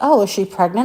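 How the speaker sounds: usual speaking voice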